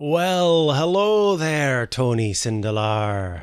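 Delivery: very slow speech with just a touch of brogue. Greeting the game master by name: slight brogue. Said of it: "It's a bit of a brogue there".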